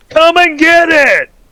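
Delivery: big booming call, very high and loud. Retelling a story, voicing a shout that everyone heard: booming voice. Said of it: "And you hear this booming voice".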